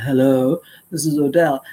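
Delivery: put-on deep man's voice. Retelling how a man introduced himself, imitating Odell's deep voice. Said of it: "this deep voice said".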